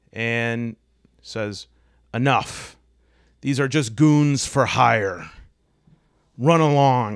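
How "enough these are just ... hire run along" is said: big, loud, booming voice. A game master voices a newcomer during a tabletop fight, in a booming voice. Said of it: "says a booming voice".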